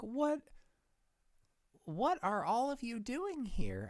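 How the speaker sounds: tiny, squeaky, swooping little mouse voice. Player whose character is a mouse, asking around, in a little mouse voice. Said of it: "I say in my little mouse speech".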